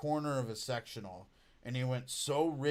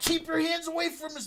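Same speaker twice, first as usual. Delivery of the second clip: put-on screaming, higher and louder; 6 dB louder than usual. Retelling screaming at people to keep hands off a face: imitating own screaming. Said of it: "I started screaming at people".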